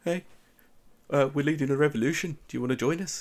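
bad put-on New Zealand accent. Quoting a scene-stealing character, in an awful new zealand accent. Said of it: "my New Zealand accent is absolutely awful".

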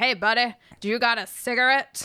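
put-on 1930s gangster voice. Recounting a scene where Jack asks a guard in the truck, Jack's 1930s gangster voice. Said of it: "he sounds like a 1930s gangster".

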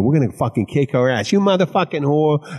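high, fired-up, thick Boston accent.

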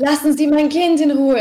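high, frantic, furious outburst, completely losing it. Retelling a mother's outburst after the speaker's remark, mimicking her losing it. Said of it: "dann ist sie halt vollkommen durchgedreht".

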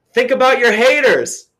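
very high, loud yell carrying far. Retelling yelling after a runner who took his AirPod out: retelling own yell. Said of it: "So I'm yelling".

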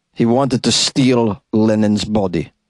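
rough, half-hearted put-on Russian accent, slow. Trying a russian accent on a story line: half-assed russian accent. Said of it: "that was a pretty half-assed Russian accent".

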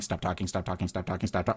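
muttering under breath. Retelling muttering at a funeral as the priest spoke: muttering under breath. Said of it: "literally under our breath".

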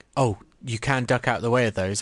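ordinary talk

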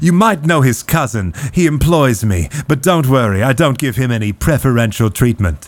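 commanding captain voice, projected outward. Voicing the well-dressed ship captain greeting the players: Chad Randy voice. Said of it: "he addresses you all directly and says".

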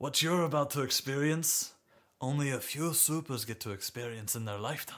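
fake French accent, slipping. In a role-play, a game character addresses Donovan in a put-on French accent. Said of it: "I'll have you know that [name] is French man that you could ever think of. Accent slips from time to time".

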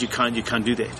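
ordinary talk, nothing marked

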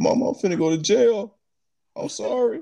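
tearful, sobbing, high, drawn-out crying. Retelling a friend's phone call to a mother after an arrest: imitating E-Money Bates crying. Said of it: "He crying".

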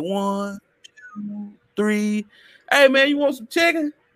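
put-on old-person voice. Describing a man to the others, speaker acts him out, imitating an old person. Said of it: "he was that old person kind of like".

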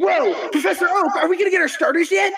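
put-on high-pitched kid voice. Acting out a scene as Ash Ketchum, asking Professor Oak for starters: playing Ash Ketchum. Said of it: "I'm Ash Ketchum".

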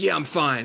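mock, angry tone. Retelling his own past reply to his wife's question: imitating himself angrily.

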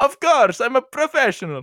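put-on Italian accent, pitched very high. Acting out a skit about serving the Christmas ham, Italian accent. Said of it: "i wanted to do a better okay, Italian accent".

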